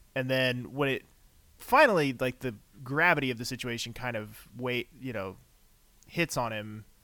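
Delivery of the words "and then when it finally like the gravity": plain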